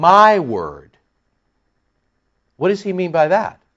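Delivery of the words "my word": the word my leaned on with heavy stress. Explaining a quoted phrase, putting the stress on 'my'. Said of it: "let's put the emphasis on the my".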